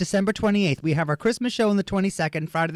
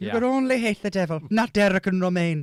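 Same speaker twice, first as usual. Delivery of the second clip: imitated Irish accent; 2 semitones higher than usual. Joking with the hosts in the nun's voice, imitating an Irish accent. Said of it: "Irish accent".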